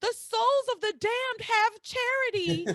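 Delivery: put-on, shrill, very high yell. Describing a favorite scene where a character yells down to another, imitating a yell. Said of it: "he yells down to Tabitha".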